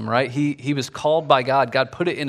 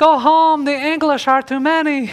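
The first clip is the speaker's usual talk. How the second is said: very high, feeble, shrill, wimpy little voice; 13 semitones higher, 6 dB louder than usual. Retelling the Braveheart scene, quoting the nobleman: imitating a wimpy guy. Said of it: "that little wimpy guy's like".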